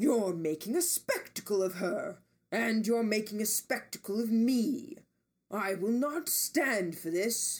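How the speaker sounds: big, booming, resounding voice, genuinely angry. Reading a story aloud, a character scolding in public: booming voice. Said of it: "Ames boomed".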